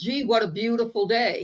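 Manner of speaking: mock sarcastic delivery. Retelling a quip made to a coworker in pouring rain: imitating her own sarcastic quip. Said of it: "just being sarcastic".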